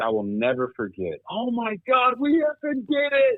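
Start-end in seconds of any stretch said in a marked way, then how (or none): 1.3-3.4 overjoyed cry, very high in pitch, slow and drawn out. Retelling the moment a teammate caught the winning pass: imitating Cam Caulfield's elation. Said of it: "the elation in his voice".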